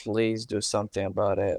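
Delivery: ordinary delivery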